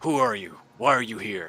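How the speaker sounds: words grunted out loudly. Game master voicing an axe-wielding figure confronting the players, grunting. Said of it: "he grunts at you and says".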